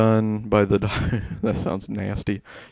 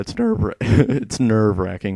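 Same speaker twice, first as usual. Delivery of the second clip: voice cracking mid-word, drawn out. Speaker recounting a nerve-wracking game section: voice cracking. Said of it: "My voice just cracked".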